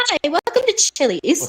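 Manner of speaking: high, slow, drawn-out put-on girly voice. Greeting customers at Chili's in a put-on girl voice. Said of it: "I'll just do my girl voice right now".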